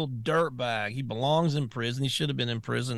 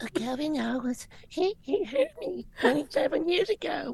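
put-on six-year-old girl voice, pitched higher. Acting out a questioning, imitating Blasey Ford as a little girl. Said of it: "You sound just like her".

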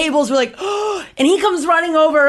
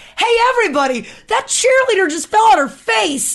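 high-pitched, screamed, jeering yell; 8 semitones higher than usual. Retelling a fall at school, quoting a guy who screamed to everybody: retelling a scream. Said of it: "he screams".

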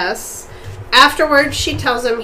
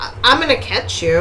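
usual speaking voice

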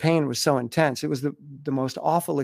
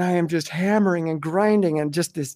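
plain

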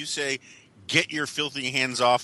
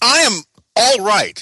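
very loud, forceful, emphatic delivery; 9 semitones higher, 12 dB louder than usual. Answering a greeting with 'how are you', very forceful. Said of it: "that was very forceful".

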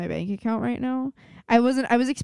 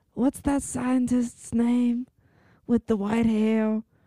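put-on, overcommitted, overdone old grandma voice. Recommending a comedy special, imitating one of the old women in it; imitating an old woman's accent. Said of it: "Why are you talking like that?".

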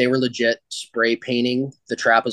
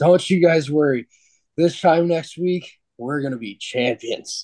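put-on slurred drunk speech, pitched up; 5 semitones higher than usual. Retelling the drunk team captain talking to the coaching staff, imitating AJ Jenks slurring drunk. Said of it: "he's slurring his words".

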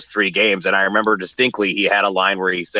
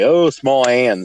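mock snide, sarcastic, cutting tone; 4 semitones higher, 3 dB louder than usual. Retelling a remark made with a friend about a player: imitating own past sarcasm. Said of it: "kind of sarcastically say".

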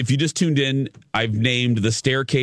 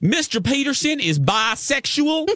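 put-on very high-pitched Southern accent; 13 semitones higher than usual. Quoting the district attorney on a tv case: imitating her southern accent. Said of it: "I love a good Southern accent".

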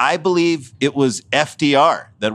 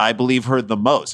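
ordinary talk, nothing marked

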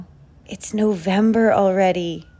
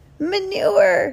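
very high, proud, triumphant tone; 12 semitones higher than usual. Narrator reading Winnie's reply as she gives Woody her present, triumphant. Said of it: "said Winnie triumphantly".

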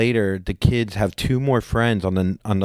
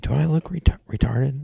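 slow, private, stage-whispered aside; 4 semitones higher than usual. Retelling a golf partner's question to the speaker, retelling a whisper. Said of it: "like whispering to me".

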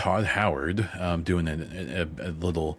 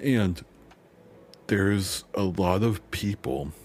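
slow speech, words stretched by a yawn; 2 semitones higher than usual. Speaker explaining a point mid-sentence, yawning while talking. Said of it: "I'm like yawning".

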